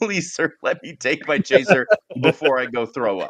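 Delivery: giggly, nervous, laughing pleading tone. Retelling how partygoers begged to drink their chaser: imitating a nervous laughing plea. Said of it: "laughed nervously and were like".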